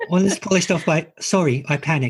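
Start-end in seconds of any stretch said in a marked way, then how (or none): 1.2-2.1 put-on calm, flat, completely unpanicked tone. Quoting a character's apology: imitating a completely unpanicked tone. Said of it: "in a completely unpanicked tone".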